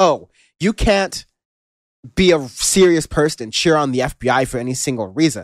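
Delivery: mock sarcastic, smug know-it-all tone.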